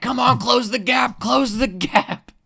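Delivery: shrill, very high, full-volume, drawn-out scream. Retelling a streamer jumping up and down during a race: imitating Wubby screaming. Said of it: "But he's screaming".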